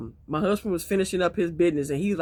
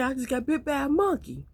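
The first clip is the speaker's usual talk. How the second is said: put-on high-pitched voice, higher; 9 semitones higher than usual. Retelling her husband calling her at work: imitating high-pitched voice. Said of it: "with that high-pitched voice".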